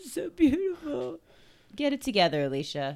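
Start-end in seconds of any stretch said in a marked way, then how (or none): 0.1-1.2 mock very high tearful gushing voice. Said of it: "in the corner crying".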